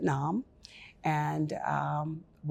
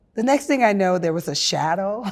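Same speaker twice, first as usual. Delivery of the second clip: plain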